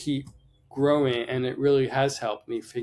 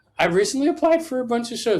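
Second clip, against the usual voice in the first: voice breaking, very high and quick; 11 semitones higher, 5 dB louder than usual. Answering a question about dealing with criticism, voice cracking. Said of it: "My voice is cracking".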